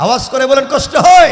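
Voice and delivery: high, loud rallying shout.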